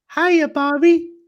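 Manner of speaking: put-on high-pitched, squeaky doll-like girl voice. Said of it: "why has Barbie got a deep voice".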